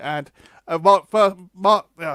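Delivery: high, loud stammering with repeated restarts. Giving channel shout-outs to viewers, the speaker trips over a name, stuttering. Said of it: "sorry, I'm stuttering again".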